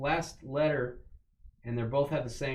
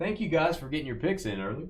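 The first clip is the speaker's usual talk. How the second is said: facetious, pointedly ironic, sarcastic tone; 2 semitones higher than usual. Thanking the others for getting their picks in early: sarcastic. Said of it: "I'm being, uh, sarcastic, Corey".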